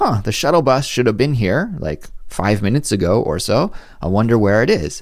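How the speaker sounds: normal talking voice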